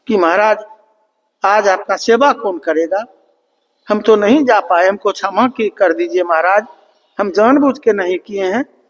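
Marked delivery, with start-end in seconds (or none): none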